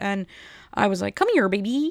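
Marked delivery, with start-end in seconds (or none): 1.2-1.9 high-pitched frog voice. Ordering at the McDonald's drive-through speaker while doing the Kermit voice. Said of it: "I was just doing the Kermit voice".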